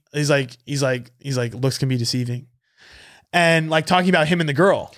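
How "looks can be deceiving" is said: put-on whisper, lower and quieter. Retelling what someone said at a party: imitating someone whispering. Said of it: "whispers over to me".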